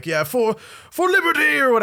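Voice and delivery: very high, excited, swooping Scottish yell. Describing a game's voice acting: imitating excited scottish yelling. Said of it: "they're, like, yelling, like".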